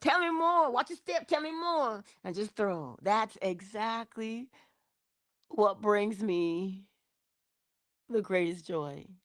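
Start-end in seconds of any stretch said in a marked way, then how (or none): 0.0-2.0 effusive, gushing, very high-pitched encouraging tone. Pretending to throw rose petals while urging someone on: gushing like the Coming to America petal thrower. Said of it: "I'm the one with a little basket of rose petals talking about".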